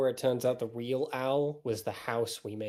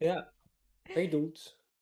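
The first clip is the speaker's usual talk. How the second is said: cartoon character voice, much quieter; 6 semitones higher than usual. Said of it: "that was a good Seuss impression".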